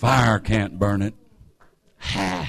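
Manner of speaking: preacher-style delivery, phrases ending on "ha". Retelling how a preacher would say it, in preacher-style delivery. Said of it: "That's how they preach".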